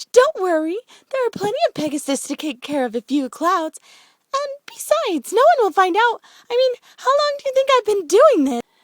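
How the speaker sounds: very high, loud, giggly chatter throughout. Narrator reads Pinkie's line to another pony, giggling Pinkie voice. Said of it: "Pinkie giggled even more".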